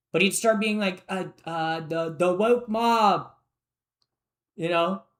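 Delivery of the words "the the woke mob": put-on slow delivery in an odd, weird accent. Imitating Elon Musk at a party, doing Elon Musk's weird accent. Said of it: "I'm trying to do, like, his weird accent that he does".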